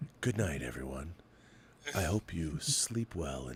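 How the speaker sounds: hushed, soft ASMR murmur. Responding to praise of their voice, the speaker demonstrates their ASMR voice. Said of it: "that's my A S M R voice".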